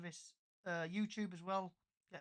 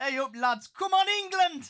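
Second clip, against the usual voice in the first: put-on Yorkshire accent, high, shrill, booming, very loud; 11 semitones higher, 18 dB louder than usual. Cheering on England for friends, in a put-on Yorkshire accent. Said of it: "say this in the Yorkshire way possible".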